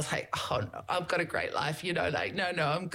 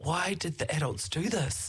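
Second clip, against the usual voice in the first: put-on childlike accent. Retelling what a son said after watching a documentary, imitating son's accent. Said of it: "this accent that I do for him".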